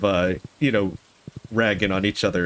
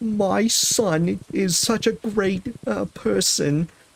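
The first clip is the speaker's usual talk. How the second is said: high, very slow, drawn-out put-on grandmother voice; 12 semitones higher than usual. Showing how another relative imitates a grandmother: imitating someone's grandmother impression. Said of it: "let me see if I can do how he does it".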